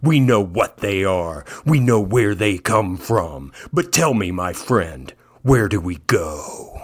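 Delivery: low, rough put-on voice. Trying out a podcaster's way of talking: gravelly Dan Carlin voice. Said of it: "I'm gonna try to start talking like that".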